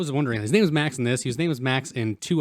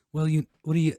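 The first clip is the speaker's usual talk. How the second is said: put-on tired raspy voice, higher; 4 semitones higher than usual. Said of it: "It's a very tired, raspy voice".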